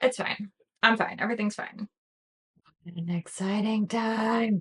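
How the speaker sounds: creature-like gremlin voice. Ending a video, slipping into a gremlin voice. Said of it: "didn't mean to let my gremlin voice sneak out there".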